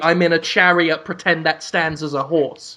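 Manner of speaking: ordinary delivery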